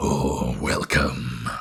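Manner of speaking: very low throaty voice, spoken with a full mouth. Describing a game character's voice, speaking as if consuming things while talking. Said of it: "he sounded like he was consuming things while he was talking".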